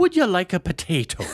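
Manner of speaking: bad Irish accent, high, loud, fully committed. Speaker recalls how they delivered a line, in their worst irish accent. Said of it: "with my worst Irish accent".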